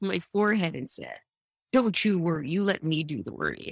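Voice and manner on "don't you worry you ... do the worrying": patronizing, dismissive, swooping, soothing, acted-out condescension. Retelling what the gastroenterologist said: imitating a condescending tone. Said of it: "It was very condescending".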